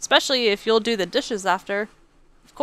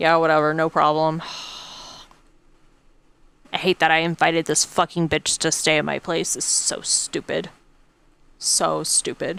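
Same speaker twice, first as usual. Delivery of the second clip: mock disgusted tone, lower; 6 semitones lower than usual. Voicing the thoughts of someone next to them: imitating someone disgusted. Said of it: "He's so disgusted".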